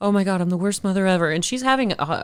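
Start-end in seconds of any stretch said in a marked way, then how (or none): 0.0-1.3 mock panicked voice. Retelling a movie scene where the mom panics: imitating a mom freaking out. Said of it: "the mom is freaking out".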